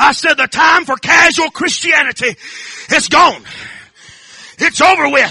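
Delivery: loud, high-pitched preaching shout.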